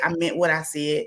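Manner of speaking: normal talking voice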